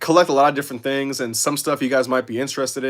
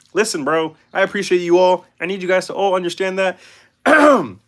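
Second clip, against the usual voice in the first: pitched-up frog puppet character voice; 5 semitones higher than usual. Streamer thanking viewers during a live stream, in a Kermit the Frog voice. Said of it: "I'm getting rusty with that Kermit voice".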